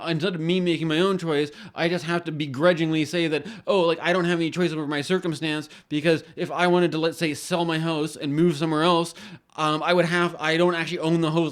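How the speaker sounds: ordinary talk, nothing marked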